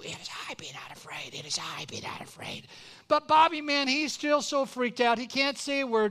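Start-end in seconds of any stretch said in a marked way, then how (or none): 0.0-2.7 soft, hushed, barely voiced whisper. Retelling a story, a teacher off to the side prompting: imitating a whisper. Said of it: "she's whispering too".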